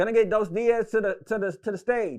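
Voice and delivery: very loud high announcer voice. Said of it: "all I hear is [name] voice".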